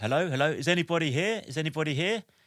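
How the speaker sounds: put-on calling out, mild. Telling a story about reaching a bungalow threshold, retelling a shout. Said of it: "I basically shouted at the threshold".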